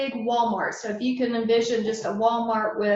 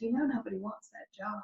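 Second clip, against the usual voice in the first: hushed, soft, secretive, confiding half-whisper; 9 dB quieter than usual. Retelling what one lady said about the new job: imitating a half-whisper. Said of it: "one lady kind of whispered to me".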